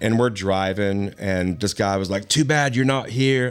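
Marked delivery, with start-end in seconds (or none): 2.3-3.5 horrible, clumsy, fake Australian accent. Retelling what a guy said while driving them back from the premiere, in a horrible put-on accent. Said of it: "This is a horrible accent".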